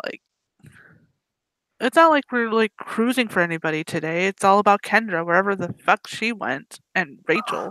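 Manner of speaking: plain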